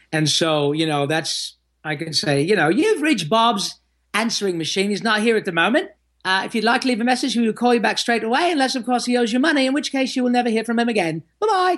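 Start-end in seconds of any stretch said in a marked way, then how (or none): 2.6-11.7 quick, high, swooping cartoon voice, rattled off. Doing the answering-machine greeting that wives have asked him for, in Pinky voice. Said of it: "would you mind making my voice male as Pinky?".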